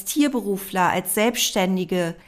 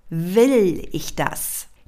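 heavy stress on the first word Will; 3 semitones lower than usual. Posing the question to ask yourself, with the stress on Will. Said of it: "Die Betonung liegt hier auf dem Willen".

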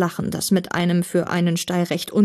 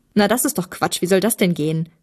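usual speaking voice

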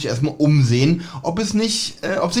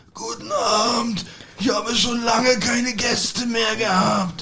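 eerie, spooky, creepy pitched-up voice; 7 semitones higher, 3 dB quieter than usual. Retelling a story where a sudden voice speaks in the hotel: creepy voice. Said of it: "Plötzlich eine gruselige Stimme".

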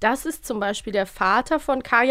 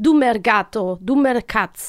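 fake jumbled Spanish-Italian-Russian foreign accent mix; 4 dB louder than usual. Quoting a character's line, in a mixed Spanish-Italian-Russian accent. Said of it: "spanisch-italienisch-russisch gemischter Akzent".

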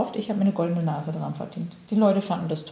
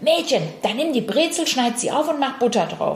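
shouting with a raised voice; 4 semitones higher, 4 dB louder than usual. Speaker quoting how a man answered her: retelling a shout. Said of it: "Er schreit mich an".

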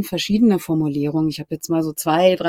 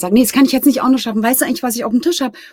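hectic, hurried, rushed babble, pitched up; 7 semitones higher, 5 dB louder than usual. Acting out saying one can't manage that too, hectic, voice higher than usual. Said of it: "so hektisch und die Stimme ein bisschen höher als sonst".

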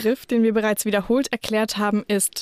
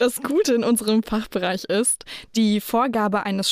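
ordinary talk

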